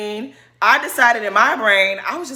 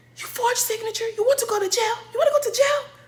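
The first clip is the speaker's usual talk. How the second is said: very high-pitched scolding voice; 13 semitones higher, 5 dB quieter than usual. Speaker retells mom lecturing them over a forged signature, in a high-pitched mom voice. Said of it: "My mom had a very high pitched voice".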